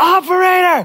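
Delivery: acted-out scream. Retelling calling an automated phone line: retelling own screaming. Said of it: "I'm just screaming at it".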